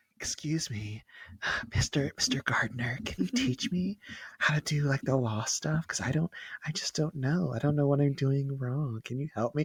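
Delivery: coy, sultry, flirtatious put-on voice. Retelling how she talks to mister gardner outside mock trial, imitating a sultry voice. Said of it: "She like puts on the sultry kind of voice".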